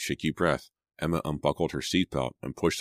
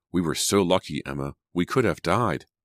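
ordinary delivery

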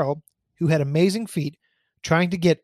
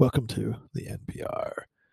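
near-whispered, soft, breathy vocal-fry radio voice; 6 semitones lower, 7 dB quieter than usual. Told not to burp, the speaker shows another way to talk: NPR vocal fry voice. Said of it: "I don't mind the vocal fry".

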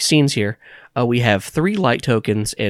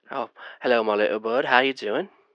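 fake British accent, quieter; 6 dB quieter than usual. Voicing Charles answering a phone call: put-on British accent. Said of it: "You just want me to do a British accent".

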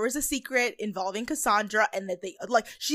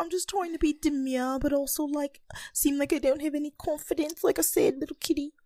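put-on babyish baby-talk voice; 5 semitones higher, 3 dB quieter than usual. Imitating how Paloma talks in her second voice: Paloma's baby voice. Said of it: "Paloma loves her baby voice".

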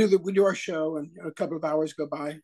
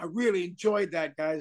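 ordinary talk, nothing marked

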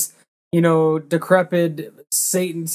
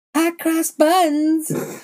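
put-on little-girl voice, much higher; 11 semitones higher than usual. Describing a character with the weirdest voice, imitating a little girlish voice. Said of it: "almost like a little girlish voice".

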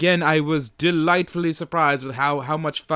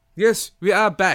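lively, put-on, newsreader-style British accent; 4 semitones higher than usual. Podcast host coming back from a sponsor break, in a BBC voice. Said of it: "I'm doing my BBC voice".

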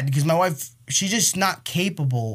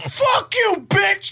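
put-on child tantrum yell, higher and louder; 5 dB louder than usual. Retelling how a child reacted to being told to calm down: imitating a child losing his mind. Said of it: "he's losing his mind".

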